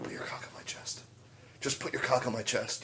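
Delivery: close, hushed, very quiet breathy whisper. Acting out a fighter on the ground during a fight: imitating a whisper.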